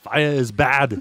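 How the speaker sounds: put-on slow, heavy Austrian action-star accent. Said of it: "start throwing that on".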